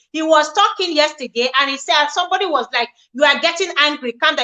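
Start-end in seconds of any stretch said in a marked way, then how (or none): none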